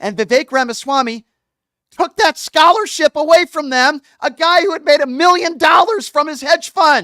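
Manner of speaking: furious angry yelling, very loud. The speaker, ranting to listeners, says it with angry yelling. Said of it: "I'm yelling because this gets me so damn angry".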